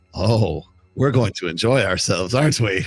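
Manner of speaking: woman character voice. Voicing the woman on the bed with a python, speaking to the player: voicing the woman on the bed. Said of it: "she looks at you, she says".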